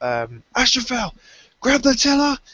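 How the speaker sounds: shouting. Playing a character in a game scene, shouting an order. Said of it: "but I'll shout".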